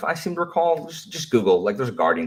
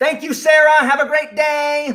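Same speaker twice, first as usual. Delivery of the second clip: loud, high-pitched yelling; 5 dB louder than usual. Thanking someone who can't hear them, yelling. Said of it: "I don't know why I'm yelling".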